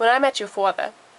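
Boston-accented voice.

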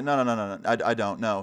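ordinary delivery

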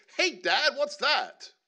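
put-on silly child's voice.

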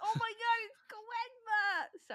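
overjoyed, very high, drawn-out delighted gush. Anime fan exclaiming mid-conversation, really happy. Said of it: "I got real happy".

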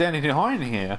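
imitated small man's high-pitched voice. Imitating a small man asking a question: high-pitched voice. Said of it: "They also speak in high-pitched voices. He goes".

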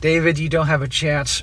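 plain

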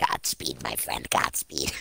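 put-on goblin voice, very low, creaky and rough. Repeating a sentence another person gave them, the speaker uses a goblin voice. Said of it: "it in my goblin dust, voice".

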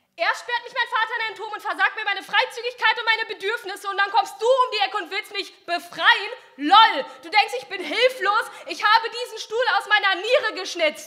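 exasperated, furious, high princess voice letting loose. Narrator voices the princess answering the knight who came to free her: fed-up princess letting loose. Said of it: "wurde dem Prinzen entgegengeschleudert und schließlich trat aus dem Schatten die Prinzessin und die, das sah man ihr an, hatte wirklich gar keinen Bock".

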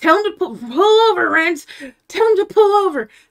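shrieking scream, very high-pitched. Retelling a moment in the car with her mom, re-enacting her own screaming. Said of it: "I'm screaming".

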